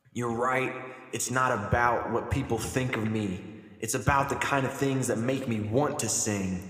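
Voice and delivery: plain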